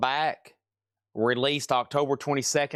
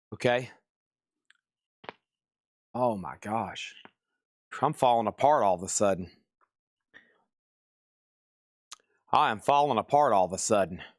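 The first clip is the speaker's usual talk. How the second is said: out of breath, catching breath, lower pitch; 4 semitones lower than usual. Just after choking on a chocolate raisin, catching breath after choking. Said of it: "I'm still trying to catch my breath".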